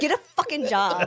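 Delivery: put-on fed-up, angry, cursing outburst. Retelling how a man reacts to customers paying with mom's card, imitating an angry outburst. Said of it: "he gets so mad because he's like".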